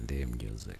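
very low, soft, smooth hustler voice.

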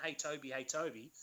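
ordinary delivery

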